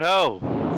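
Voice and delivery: high, loud shout. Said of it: "I shout".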